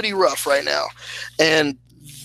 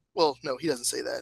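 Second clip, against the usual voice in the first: ordinary delivery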